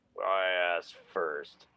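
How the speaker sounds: deep, wharf-like macho voice. Retelling the reply after the speaker asked who's there: deep macho voice. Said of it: "this deep, macho, wharf-like voice".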